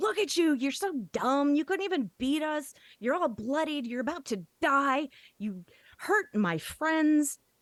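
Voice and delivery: furious, angry, high and swooping delivery. A player taunts a bloodied monster during a tabletop game, angry taunting insults. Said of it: "every insult to his intelligence ... come spewing out of me".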